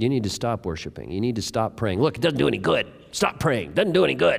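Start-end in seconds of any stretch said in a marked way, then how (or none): 2.0-4.4 put-on creaky, pitched-up little inner voice. A speaker demonstrates the little voice listeners will hear, the little inner voice. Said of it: "In that voice. That's the voice".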